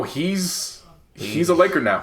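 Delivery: emphatic "Laker now". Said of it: "if there's any doubt".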